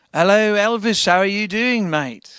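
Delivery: unhurried, deliberate, slow and drawn-out delivery. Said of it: "the Beatles met [name], and they were like".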